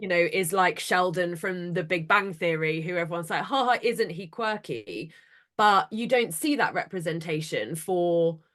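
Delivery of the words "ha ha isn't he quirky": ordinary talk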